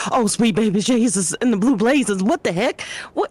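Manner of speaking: sudden startled, shocked exclamation. Playing Rania, jumping back when Amelia startles her with nails: startled. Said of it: "Rania would definitely be startled and be like".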